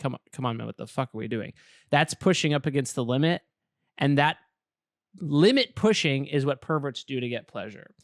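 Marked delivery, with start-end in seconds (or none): 0.0-1.5 acted-out upset, fed-up barber losing patience. Acting out a barber losing patience with a customer: imitating an annoyed barber. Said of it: "the barber gets upset and it starts getting annoyed".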